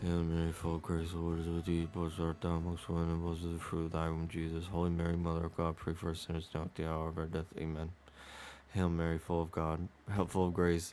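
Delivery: very soft, rote, mumbled muttering. Retelling how churchgoers said the rosary at weekday mass: imitating mumbled prayer. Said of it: "in unison mumbling".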